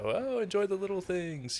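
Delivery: high, facetious, sarcastic, mock sing-song.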